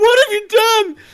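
shrill, high, loud sobbing wail. Narrating a scene as Jimmy runs to Kerrigan, Jimmy crying. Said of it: "starts crying and goes".

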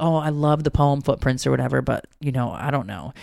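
normal talking voice

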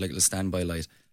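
ordinary talk

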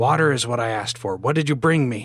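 loud, every word hissed out. Narrator voices the first of several voices in a story, hissing. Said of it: "the first hissed".

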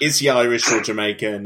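plain

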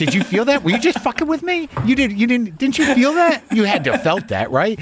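high, incredulous pleading, pushed way up in disbelief. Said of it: "and I'm like".

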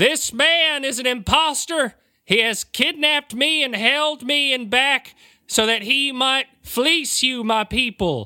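shrill, very high, declaring shout. Player character kicks the door open and addresses the people; shouting. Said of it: "And dressed as I am, I kick the door open and shout, "Good people of [name], hear me! I am the real [name]!".

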